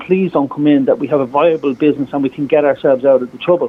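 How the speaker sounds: ordinary delivery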